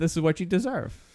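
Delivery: ordinary delivery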